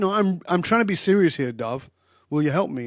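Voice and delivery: put-on put-out, miffed, huffy, impatient pleading tone. Retelling a woman's reply after his joking advice; imitating her huffy tone. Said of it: "Now she's getting huffy".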